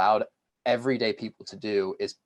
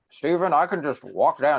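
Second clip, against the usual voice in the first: put-on gruff grandfather voice, high and loud; 6 semitones higher, 5 dB louder than usual. Recalling explaining his plans to his grandfather, imitating his grandfather's voice. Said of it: "This is my grandfather voice".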